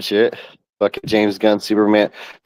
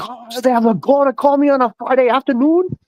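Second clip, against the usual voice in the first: mock very high-pitched, slow, pissed-off grumble; 14 semitones higher than usual. Retelling a movie scene where a dad answers the phone, imitating an angry, pissed-off rant. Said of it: "He gets all fucking pissed".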